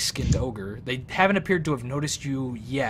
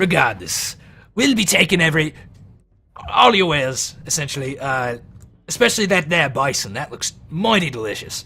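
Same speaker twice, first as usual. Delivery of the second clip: loud ogre character voice; 3 semitones higher, 8 dB louder than usual. Voicing the ogre demanding the players' wares: ogre character voice. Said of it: "this one's speaking in common".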